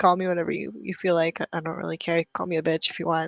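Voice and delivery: ordinary delivery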